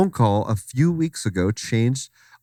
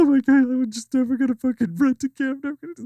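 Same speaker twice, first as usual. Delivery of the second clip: put-on very high, tearful weeping voice; 14 semitones higher than usual. Retelling how the woman who owned the house reacted: imitating a crying woman. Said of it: "the woman who owned the house was crying over the sink".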